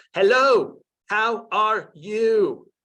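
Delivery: loud, very slow, condescending speech, spelled out. Showing how not to talk to students: patronizingly slow and loud speech. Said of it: "patronizingly slow or loud".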